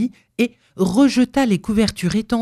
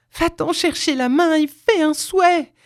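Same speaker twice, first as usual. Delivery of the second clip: high, eager, quivering cry full of expectation; 9 semitones higher than usual. Narrator reads a wife pressing her husband after his stammered reply: cried out, trembling with anticipation. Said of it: "cria sa femme, toute frémissante d'expectative".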